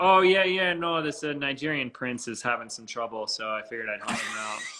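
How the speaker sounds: mock dead serious, totally dry, matter-of-fact delivery. Retelling what the speaker told her back then, retelling a deadpan reply. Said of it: "with like the most like deadpan".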